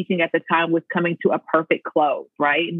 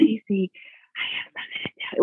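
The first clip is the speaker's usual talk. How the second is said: put-on nervous whisper, pitched higher; 3 semitones higher, 4 dB quieter than usual. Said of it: "I nervously whispered".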